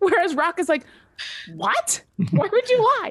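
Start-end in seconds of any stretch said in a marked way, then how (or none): 1.5-3.1 high, shocked, genuinely upset disbelief. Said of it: "actually upset that someone would lie to her".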